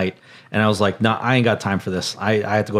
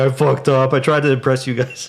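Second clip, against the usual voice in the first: mock crying, higher pitch; 4 semitones higher than usual. Retelling a game character who causes an explosion and starts crying: imitating a character crying. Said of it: "he starts crying".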